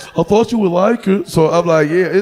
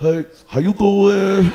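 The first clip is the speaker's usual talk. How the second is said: put-on female voice. Retelling a phone call from a woman he describes, imitating her voice. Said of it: "don't laugh at my bitch voice".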